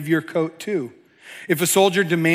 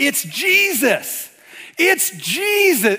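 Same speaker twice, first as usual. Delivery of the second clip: mock, very high shriek, drawn out; 10 semitones higher than usual. Telling the audience about yelling at the tv, retelling own screaming. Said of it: "And I'm just screaming".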